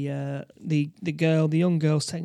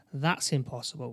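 plain

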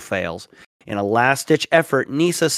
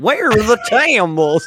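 put-on pitched-up, country-fried Southern accent; 7 semitones higher, 4 dB louder than usual. In conversation, speaker quotes someone's line: southern accent. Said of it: "In the like the southern accent".

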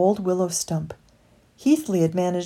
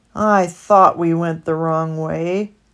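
storybook sigh carried through the words, voice raised; 5 dB louder than usual. Lost in a flooding meadow, one companion answers the other, sighing. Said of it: "sighed Heathley".

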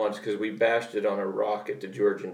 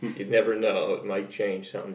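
ordinary delivery

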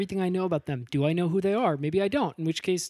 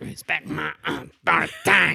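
put-on cartoon kid voice, louder; 4 dB louder than usual. Retrying a Cartman impression, getting better: Cartman impression. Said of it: "That last one was probably your best take".

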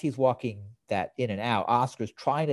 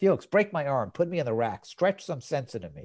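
ordinary talk, nothing marked

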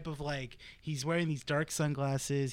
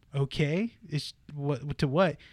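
usual speaking voice

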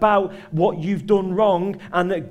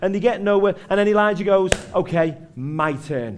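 ordinary talk, nothing marked

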